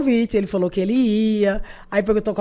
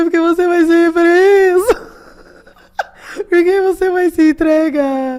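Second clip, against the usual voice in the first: very slow, high-pitched sobbing speech; 9 semitones higher, 7 dB louder than usual. Retelling what she told a man who stopped in front of her, imitating her own crying. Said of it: "Chorando assim".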